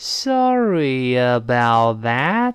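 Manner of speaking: slow, drawn-out, sounded-out pronunciation. Showing learners a slower way to say the phrase: said slowly. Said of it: "你要是读不出来就慢一点".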